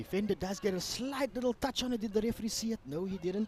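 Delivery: hushed, half-whispered commentator voice. Commentating a match of fourteen-year-olds from the sideline, half-whispering. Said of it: "That's why I am whispering for that one".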